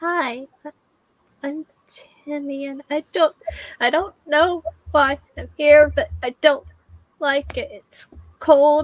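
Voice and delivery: put-on sorrowful little ghost boy voice. Voicing a ghost child named timmy who then starts crying: sad ghost child voice. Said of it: "He just turns to the others and goes".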